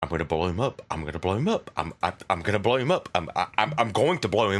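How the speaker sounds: mumbling quietly under breath. Speaker's character walks back into the room: mumbling under breath. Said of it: "I'm mumbling under my breath".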